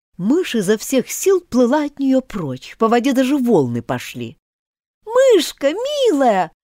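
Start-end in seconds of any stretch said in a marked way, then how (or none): 5.1-6.5 affectionate, coaxing, tender, high calling out. Calling after a mouse swimming away, tenderly calling out. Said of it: "ласково закричала ей вслед Алиса".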